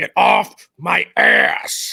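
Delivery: very slow, rough, loud, drawn-out, fed-up angry growl. Retelling how a friend snaps at tailgaters: imitating Fro's road-rage line. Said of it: "he would say it just like that".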